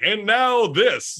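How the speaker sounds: broadcast announcer delivery. Imitating the voice actor who announces a talk show: imitating David Kaye's announcer line. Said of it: "the guy that's like".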